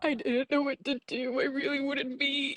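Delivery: fake sobbing. Retelling trying to stay vegan while wanting meat, mock crying. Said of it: "Are you crying?".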